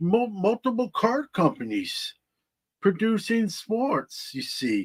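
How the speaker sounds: terrible, high, swooping, sing-song character voice. Talking about sports card companies, speaker drops into a terrible Yoda impression. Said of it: "terrible Yoda impression".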